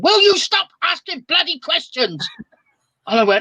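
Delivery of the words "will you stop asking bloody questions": put-on sudden, high, fed-up angry shout. Retelling shouting at people asking questions: retelling own shout. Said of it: "I just shouted at them".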